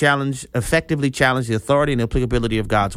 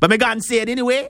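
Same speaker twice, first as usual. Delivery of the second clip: terrible put-on Jamaican accent, very high-pitched; 10 semitones higher than usual. Retelling the crowd who wanted to see Jesus, bad Jamaican accent. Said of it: "That was a terrible accent".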